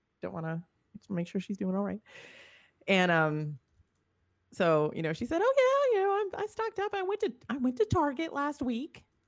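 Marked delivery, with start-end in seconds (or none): 5.4-9.0 put-on grandma voice, Minnesota accent, much higher, slower. Retelling a check-in with their grandma, in a Norwegian Minnesotan grandma accent. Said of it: "So that's why I'm talking like that".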